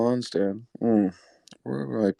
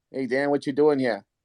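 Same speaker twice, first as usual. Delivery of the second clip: put-on Boston accent, put on; 2 semitones higher than usual. Retelling the manager Joe walking in, in Joe's Boston accent. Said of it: "He's got the Boston accent".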